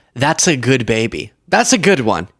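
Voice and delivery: ordinary talk, nothing marked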